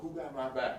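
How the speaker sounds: ordinary delivery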